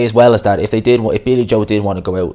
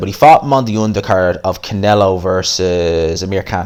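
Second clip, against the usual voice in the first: ordinary delivery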